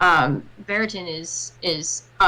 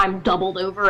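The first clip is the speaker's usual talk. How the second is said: plain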